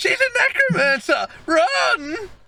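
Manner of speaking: frantic, panicked shriek, very high and slow. Voicing fleeing civilians who run out the front: fleeing civilians yelling. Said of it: "you can hear them yelling".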